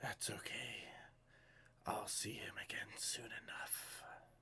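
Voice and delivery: soft, shadowy whisper. Narrating a scene, voicing a voice that whispers back from all around: shadowy whisper. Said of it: "shadowy voice whisper back".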